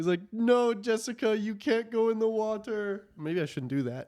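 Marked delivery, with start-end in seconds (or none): 0.3-3.1 put-on slow, high, drawn-out, easy Jamaican accent. Describing a video of a man by the water, imitating a Jamaican accent. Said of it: "I think he's got like a Jamaican accent".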